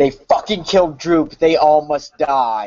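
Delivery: loud crying out in a character voice. Warning the others of the oncoming bugbears in character, yelling in character. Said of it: "and yell".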